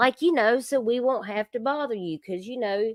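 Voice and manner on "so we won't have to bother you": put-on nice, sweet, polite Southern accent. Retelling what a caller said: imitating a polite Southern tone. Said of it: "tried to say it in a nice Southern way".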